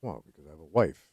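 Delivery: soft, glum, mournful voice. Answering another speaker's question: sad, like your dog died. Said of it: "You say it like your dog died".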